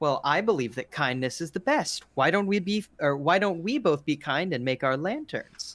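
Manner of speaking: light, very playful delivery. Voicing Hiroki suggesting to Izumi that they make lanterns: very playful tone. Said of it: "in a very playful tone goes".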